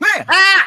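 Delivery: very high, loud robot voice on "ah". Voicing a robot waking up in front of the players: robotic voice. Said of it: "with a sort of robotic voice".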